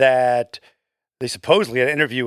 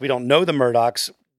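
ordinary talk, nothing marked

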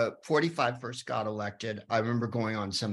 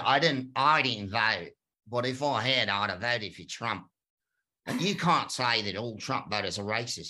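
imitated Australian accent. Retelling a man's objection when the speaker was a guest, imitating his Australian accent. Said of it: "in his Australian accent".

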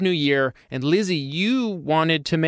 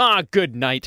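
exasperated exclaiming. Showing how a substitute swear word might sound in context: good night as an exclamation. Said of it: "if you use it in context".

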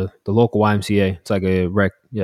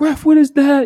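mock screaming, much higher, louder; 7 dB louder than usual. Retelling how their dad screamed at the referee from the sidelines, retelling dad's scream. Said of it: "my dad was screaming from the sidelines, like".

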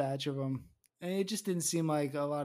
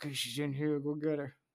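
ordinary talk, nothing marked

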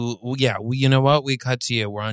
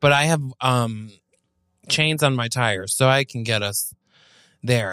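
normal talking voice

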